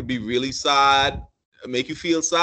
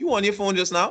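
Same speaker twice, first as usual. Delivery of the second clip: suspicious, distrustful, probing tone with raised pitch; 7 semitones higher than usual. Demonstrating example tones, the speaker voices a suspicious question: suspicious tone.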